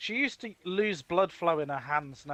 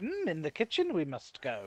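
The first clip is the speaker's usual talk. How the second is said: little alien-master voice, pitch swooping up and down; 3 dB quieter than usual. Retelling answering a nan the way it used to be done: Yoda voice. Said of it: "And I'd always talk like Yoda".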